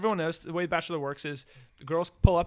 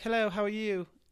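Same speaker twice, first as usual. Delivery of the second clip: terrible put-on Australian accent; 4 semitones higher than usual. Retelling Bree's greeting to Colton, in a terrible Australian accent. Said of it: "I'm doing a terrible accent".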